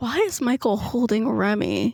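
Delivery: very softly spoken voice. Voicing a character's question during a role-play game, very soft voice. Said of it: "very softly goes".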